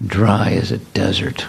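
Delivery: creaky voice breaking on every word. Retelling a car ride, the speaker imitates Badahari's soft, cracking reply. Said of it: "with his voice cracking like that".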